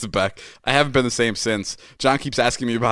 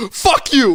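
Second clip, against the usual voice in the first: put-on furious voice, higher and louder; 13 semitones higher, 6 dB louder than usual. Retelling Ilya insisting on the bet: imitating Ilya furious. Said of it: "Ilya was so fucking furious".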